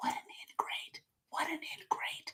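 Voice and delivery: barely audible, faint whisper. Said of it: "That's the inner voice".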